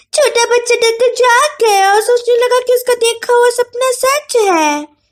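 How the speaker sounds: very high, babyish, fake little-girl voice. Reading a story where a woman mocks the boy: fake little-girl baby voice. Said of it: "बच्ची जैसी नकली आवाज में कहा".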